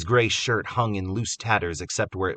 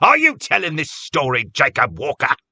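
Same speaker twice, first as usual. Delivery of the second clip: very loud, sharp, high-pitched delivery; 7 semitones higher, 9 dB louder than usual. Reading a story aloud, one man rebukes another for interrupting: speaking sharply. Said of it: "Cobb said sharply".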